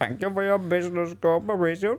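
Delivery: heavy put-on Indian accent, pitched high. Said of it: "Why did he turn Indian?".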